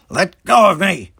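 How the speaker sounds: very loud, high snarl through gritted teeth. A man with his hand stuck in a mouth warns his attacker, snarled through gritted teeth. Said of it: "he snarled through gritted teeth".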